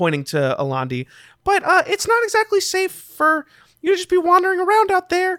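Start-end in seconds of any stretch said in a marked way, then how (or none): 1.4-5.4 high-pitched goblin voice. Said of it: "the goblin kind of steps forward and looks at you, and he says".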